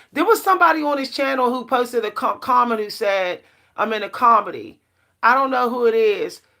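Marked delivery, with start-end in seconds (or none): none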